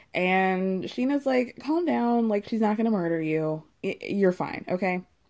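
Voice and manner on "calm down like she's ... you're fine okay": usual speaking voice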